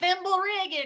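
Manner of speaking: thimble rigging said loud, high, in Southern accent. Reading a hard adventure title aloud again: said in a Southern accent. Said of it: "try saying it Southern".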